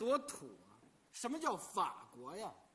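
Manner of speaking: speaking in Shanxi dialect.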